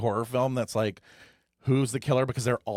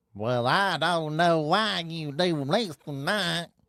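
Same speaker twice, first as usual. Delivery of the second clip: put-on southern drawl, high and very slow; 5 semitones higher than usual. Talking about the southern accent, imitating a southern accent. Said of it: "The southern accent".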